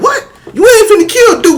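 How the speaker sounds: very high, tearful, sobbing disbelief. Retelling seeing his uncle shackle his pet cow: imitating his childhood crying. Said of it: "I'm crying".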